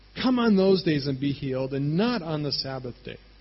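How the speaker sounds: plain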